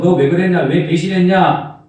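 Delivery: reproachful, accusing tone.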